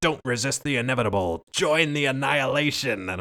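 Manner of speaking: mock maniacal villain scream, high, top of lungs. Quoting a favorite line from a villain, imitating Hiltz screaming. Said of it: "he's screaming at the top of his lungs".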